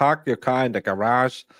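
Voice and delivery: put-on, exaggerated, comic Boston accent. Joking that a woman gets tested with a phrase, in a funny Boston accent. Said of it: "she's a funny accent".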